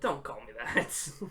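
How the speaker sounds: coy annoyance, breathy, hushed and irked. Describing a game character's line delivery: imitating Peter Dinklage's coy annoyance. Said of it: "coy sort of annoyance".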